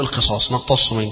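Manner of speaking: plain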